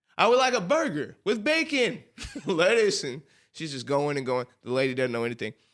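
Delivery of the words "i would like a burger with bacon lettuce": mock loud, very high, overly inflected announcer voice. Act out your mother ordering from a lady she thinks can't hear her, imitating mother speaking louder, inflecting. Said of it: "Let me speak louder. So she inflects".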